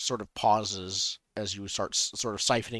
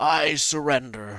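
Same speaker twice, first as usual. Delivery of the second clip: much more wizardly character voice, high and loud; 5 semitones higher, 7 dB louder than usual. Narrating a story, the speaker voices a character: wizardly voice. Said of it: "a much more wizardly voice".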